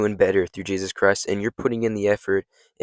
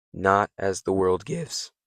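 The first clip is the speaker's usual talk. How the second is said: voice cracking, slower. Speaking to your friends about the peace Jesus gives, voice cracking. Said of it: "Sorry for the voice crack".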